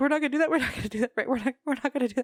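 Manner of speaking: high, frantic, panicked pleading tone. Retelling pleading with the pilot during a plane ride: retelling panicked pleading. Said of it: "I'm like panicking".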